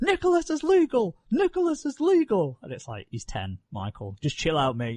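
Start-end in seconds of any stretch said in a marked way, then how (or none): 0.0-2.6 very high, shrill, excited announcer-style scream. Retelling a funny moment when he got tagged in at a match, imitating Michael Cole screaming. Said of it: "He was just screaming".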